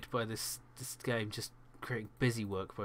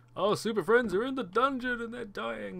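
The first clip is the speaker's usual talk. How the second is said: much higher, louder put-on cartoon announcer voice. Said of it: "and now I can't do it".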